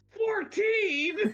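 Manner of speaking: very loud, very high, top-of-the-lungs bellow. Telling a story about a movie scene, re-enacting his own yell at top of lungs. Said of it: "yell at the top of my lungs".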